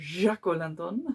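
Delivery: put-on odd, weird French accent. Unboxing items and naming a tea light: weird French accent. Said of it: "I don't know why I said that with a weird French accent".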